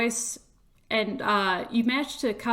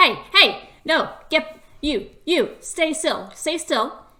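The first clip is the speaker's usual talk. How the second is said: loud, pitched-up, barking raised voice; 6 semitones higher, 6 dB louder than usual. Voicing someone yelling at a creature to stay still: loud voice. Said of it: "you hear a loud voice going".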